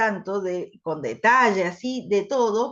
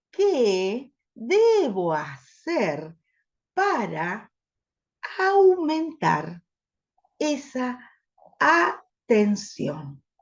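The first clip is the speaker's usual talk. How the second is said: very slow, halting, emphasized vowels drawn out. Saying it in influence mode to raise attention: stretched, emphasized vowels. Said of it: "vamos a decirlo en modo influencia. Pongo el énfasis en las vocales".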